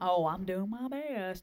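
lackluster, token-effort, half-hearted, lazy tone. Mocking a half-hearted attitude toward trying: mock half-hearted tone. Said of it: "don't give it, like, a half tush".

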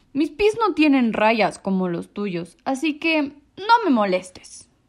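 growled, grumbling, dismissive low delivery. A walrus answers a small creature looking for its mother, growling. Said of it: "gruñó la señora Morsa".

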